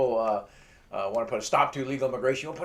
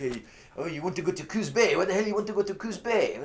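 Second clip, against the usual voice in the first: rude put-on French accent, pitched up; 5 semitones higher than usual. Listing the voice options he tried, doing the French guy: put-on rude French accent. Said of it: "the French guy's is a big dick".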